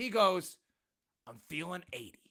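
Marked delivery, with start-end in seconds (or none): 1.3-2.1 very quiet, low, hushed, strongly anguished voice. Retelling to the group what a man answered: retelling with strong angst. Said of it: "with a strong angst in his voice".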